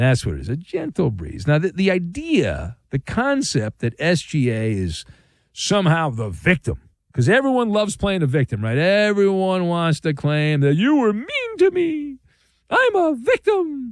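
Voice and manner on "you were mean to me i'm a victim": very high, weird, drawn-out cartoon voice. Mocking people who play the victim, speaker uses a mocking cartoonish voice. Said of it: "It's a cartoonish voice".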